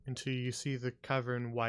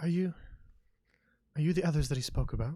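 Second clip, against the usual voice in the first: secretive, hushed, halting voice; 4 semitones higher, 4 dB louder than usual. Voicing a woman who asks the newcomers a question: hushed voice. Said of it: "she responds kind of in a hushed voice".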